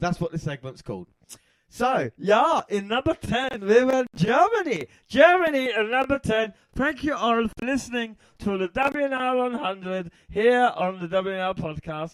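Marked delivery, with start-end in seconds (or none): 1.7-12.1 terrible put-on German accent, pitched up. Podcast host announces number ten, Germany, in a bad German accent. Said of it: "That's terrible".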